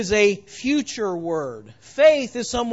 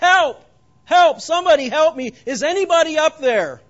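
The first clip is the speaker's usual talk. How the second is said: loud, high-pitched, desperate crying out; 6 semitones higher, 5 dB louder than usual. Telling a joke about a man hanging from a cliff branch, acting out a cry for help. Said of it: "he cried out".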